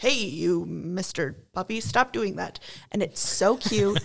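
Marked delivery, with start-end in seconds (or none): 0.0-2.6 put-on scolding in a Dutch accent. Describing how Dr. Pol talks to a puppy, in Dr. Pol's Dutch accent. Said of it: "Brilliant accent".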